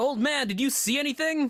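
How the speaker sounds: booming, very high feminine voice. Narrating a game scene, the speaker voices someone calling from the shop: booming feminine voice. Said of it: "this very booming feminine voice".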